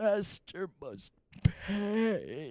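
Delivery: swooping, snarling, growling dog voice, pay drawn out. Narrating a game, voicing a dog that stands up to fight beside the players, growling. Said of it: "growls and says".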